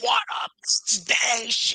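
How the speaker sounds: high-pitched, screamy, shouty burst. Remembering a guy who would greet them, retelling a scream. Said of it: "he would just like fucking scream".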